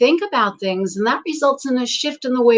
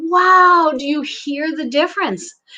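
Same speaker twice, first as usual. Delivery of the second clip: usual speaking voice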